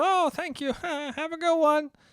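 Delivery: put-on high, sweet old man voice.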